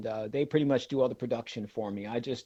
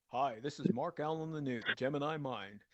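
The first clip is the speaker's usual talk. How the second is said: put-on old radio announcer voice, quieter; 2 semitones higher, 7 dB quieter than usual. Speaker demonstrating the voice he used when starting out, old radio voice. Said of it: "my old radio voice".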